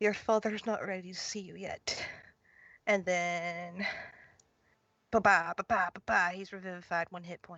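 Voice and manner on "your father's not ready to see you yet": softly whispered. Playing a character leaning down into a revived one's ear, whispering. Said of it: "I'm going to whisper".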